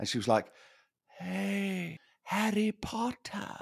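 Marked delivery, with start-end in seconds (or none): 1.2-3.6 high, soft, lost-voice half-whisper, stretched hey. Retelling a call with a manager who lost her voice, half-whispery. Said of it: "it was so whispery".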